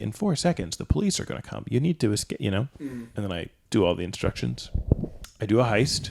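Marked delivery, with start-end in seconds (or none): 0.0-2.7 mechanical robot voice, sounding like over a phone. Retelling a phone call that gave instructions, in a robot voice. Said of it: "I just hear this like robot voice".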